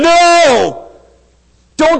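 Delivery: loud, high protesting scream, no drawn out. Retelling a story where a man with demons screams back at his teacher; retelling a scream. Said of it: "this guy is screaming back going".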